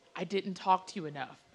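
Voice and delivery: weak, feeble, barely pushed-out voice. Retelling what a partner finally said after apologizing: imitating a weak voice. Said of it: "he kinda weakly says".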